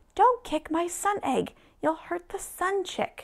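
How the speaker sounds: high crying-out voice. As another character kicks the sun egg, the elf protests, crying out. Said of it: "cried the elf".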